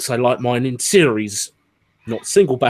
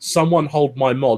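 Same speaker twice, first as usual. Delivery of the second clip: ordinary talk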